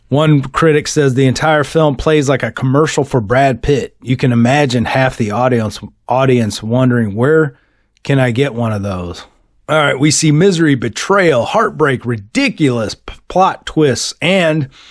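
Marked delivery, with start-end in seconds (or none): none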